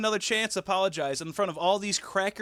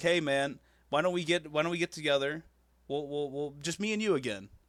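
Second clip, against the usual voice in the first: usual speaking voice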